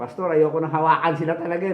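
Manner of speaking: ordinary talk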